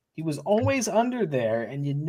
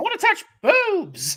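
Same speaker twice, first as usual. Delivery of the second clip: put-on wrestling commentator voice, higher; 13 semitones higher than usual. Imitating a commentator reacting to Kane: Jerry Lawler impression. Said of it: "Jerry Lawler's just like".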